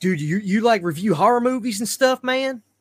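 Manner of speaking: put-on very high, loud country accent. Retelling what a guy at work said on finding out about your YouTube, in your best country accent. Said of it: "I'm doing my best country accent".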